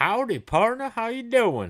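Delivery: very high, loud, shrill put-on hillbilly cowboy accent. Greeting someone just for fun, in a put-on cowboy accent. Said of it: "talk with some like hillbilly accent, like a cowboy".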